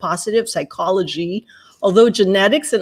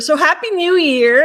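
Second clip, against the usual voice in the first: "happy" stressed, raised high and loud. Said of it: "Emphasis on the happy".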